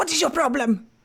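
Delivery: hushed whisper. Player character approaching a crow once the others are further off: whispered. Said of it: "I'll just like whisper up to it".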